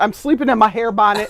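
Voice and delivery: ordinary talk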